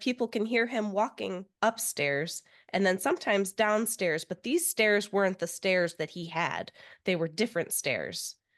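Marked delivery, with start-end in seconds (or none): none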